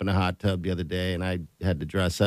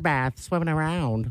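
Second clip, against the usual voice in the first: silly, high, squeaky tiny bird voice. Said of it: "Why am I talking like this?".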